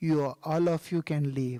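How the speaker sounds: mock very grave, solemn voice. Storyteller retelling the guru's answer to his disciples, in a very grave voice. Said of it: "in a very grave voice he said".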